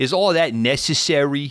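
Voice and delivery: put-on New York accent slipping out, very high and loud. Recapping a movie, quoting the actress's line during a fight, imitating a New York accent. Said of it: "the actress's New York accent comes out".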